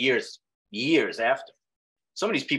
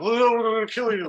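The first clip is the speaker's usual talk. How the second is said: mock, very high, slow, slurring drunk voice; 12 semitones higher, 3 dB louder than usual. Retelling how Matt, drinking and smoking, said his line: imitating Matt's drunken slurring.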